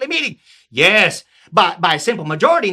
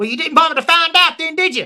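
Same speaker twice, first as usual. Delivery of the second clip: put-on southern US rural accent, higher pitched; 7 semitones higher than usual. A peasant answers the king, in a southern peasant accent. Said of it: "have Southerners as the peasants".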